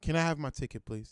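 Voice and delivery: not raising voice, polite. Retelling a traffic stop, asking the cop for his ticket, reenacting staying calm. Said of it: "I don't raise my voice".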